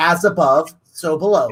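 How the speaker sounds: normal talking voice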